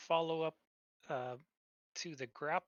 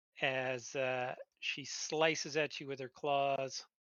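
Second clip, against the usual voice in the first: normal talking voice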